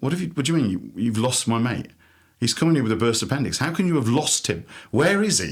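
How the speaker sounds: play-acted angry, demanding outburst, shouting. Retelling a friend shouting at admissions staff: imitating Mark shouting angrily. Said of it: "he sounds really angry 'cause he was shouting".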